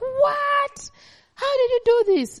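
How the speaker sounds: put-on very high, amazed, childlike squeal. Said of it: "She even screams".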